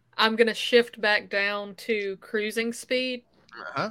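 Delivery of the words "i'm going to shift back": ordinary delivery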